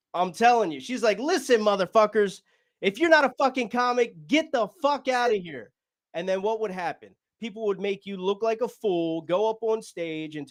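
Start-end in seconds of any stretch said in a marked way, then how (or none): 1.2-5.8 put-on yell, higher, slower. Retelling how she yelled at the comics in the room, retelling a yell. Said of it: "just yelling at us like".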